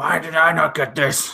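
put-on generic angry-guy voice. Voicing a line about Roman Reigns, put-on generic angry voice. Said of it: "my generic angry".

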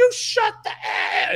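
high-pitched, slow, loud yell.

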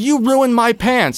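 put-on very high-pitched shriek. Retelling a run-in with a stranger: retelling a scream. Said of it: "I turn around and I scream".

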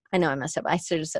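normal talking voice

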